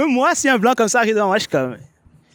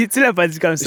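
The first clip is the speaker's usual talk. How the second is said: plain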